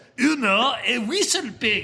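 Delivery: put-on thick French accent. Retelling what a stranger on a mountain bike said: heavy French accent. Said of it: "in a very heavy French accent".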